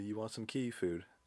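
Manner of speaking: play-acted, coaxing call, calling out. Retelling searching outside for a lost cat, imitating calling out to a cat. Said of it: "I'm calling out to her".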